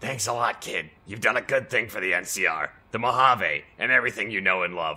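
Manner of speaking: low, heavy chain smoker's voice. Game character handing over a gift for helping the NCR, heavy smoker's voice. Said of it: "I don't know why I sound like this now".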